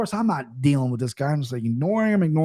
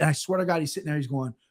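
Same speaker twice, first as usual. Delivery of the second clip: ordinary talk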